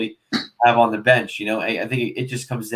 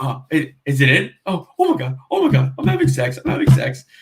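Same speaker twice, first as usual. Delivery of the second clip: frantic freak-out, voice swooping and swinging wildly; 3 semitones higher than usual. Retelling a Superbad bedroom scene, imitating McLovin freaking out. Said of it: "he's freaking out".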